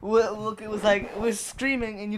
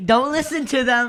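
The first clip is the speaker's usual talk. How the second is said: put-on Australian man yelling, higher and louder; 3 semitones higher, 5 dB louder than usual. Retelling a wrestler yelling from the back during a match: imitating Kyle yelling. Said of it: "Kyle yelling during the whole thing".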